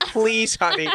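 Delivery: play-acted, high, soothing, coaxing pleading voice. Retelling Mom urging the kids to hurry for a flight, imitating pleading mom. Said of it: "She's like".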